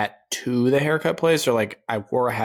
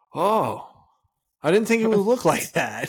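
father-like voice pitched very high; 9 semitones higher than usual. Retelling a bad buzz cut, imitating his dad. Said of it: "That was a good impression of him".

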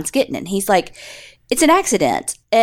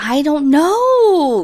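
very whiny, high, with a drawn-out "know"; 6 semitones higher than usual. Retelling a suspect's answer in an interrogation: imitating a whiny reply. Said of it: "very whiny".

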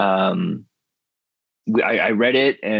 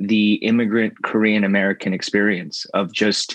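ordinary talk, nothing marked

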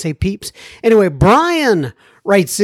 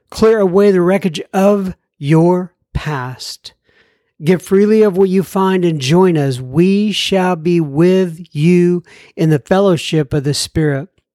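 ordinary delivery

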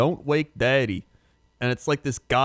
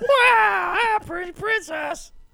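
very high pitch, "wow" stretched out. Recalling a board game commercial, speaker quotes the girl in it: Teen Girl Squad voice. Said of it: "I like how you did Teen Girl Squad".

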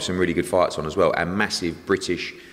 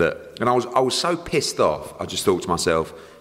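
ordinary talk

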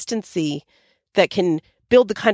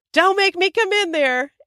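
mock shouted, very high, threatening yell; 12 semitones higher than usual. Retelling how her husband yelled over to the kids: imitating a yell. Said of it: "he yelled over to them".

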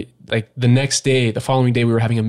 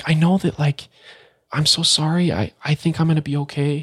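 imitated self-calming woman's voice, higher, slower; 4 semitones higher than usual. Retelling a caller on the line, imitating someone calming herself. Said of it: "trying to calm herself down almost".

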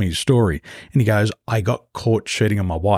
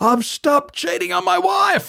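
mock very high, full-throated, rising shout. Retelling a pilot shouting across headquarters: imitating someone screaming. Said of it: "screams out to me at the top of his voice".

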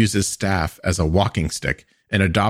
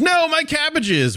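mock squealing cry, very high yell. Recapping the show, acting out the merchant's cry: retelling the Cabbage Merchant's yell. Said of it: "The merchant yells".

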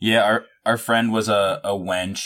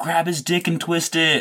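put-on, high-pitched, drunken heckling yell; 9 semitones higher than usual. Telling a Ren Faire story, the speaker quotes a friend at a knight, retelling a friend's yell. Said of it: "my friend just kept yelling".

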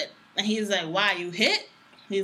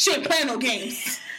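mock-hostile voice, higher; 4 semitones higher than usual. Telling what he said about an older woman, mimicking a hostile voice. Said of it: "And he in a hostile voice".

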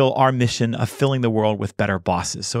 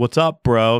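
put-on teenage boy voice, slower. Host thanking a guest, recalling the guest's voice bit, 14-year-old boy voice. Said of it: "the 14-year-old voice that you gave me".

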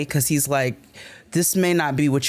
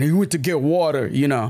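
fake, put-on ignorant American accent. Speaker retells how he repeated the remark in a put-on ignorant american accent. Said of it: "he starts saying it in like what he deems to be an ignorant American accent".

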